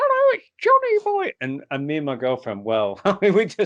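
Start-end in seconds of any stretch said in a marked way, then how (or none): 0.0-1.3 put-on high-pitched small boy voice. Retelling a woman in a trance cabinet speaking as a spirit, Johnny Boy little-boy voice. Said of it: "she talks like that".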